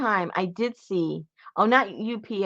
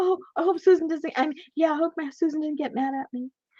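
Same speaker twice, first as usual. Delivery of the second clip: strained, tension-laden, pitched-up anxious voice; 8 semitones higher than usual. Describing a clip, acting out the woman's words in a mock-tense voice. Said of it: "hear the the tension in in the voice".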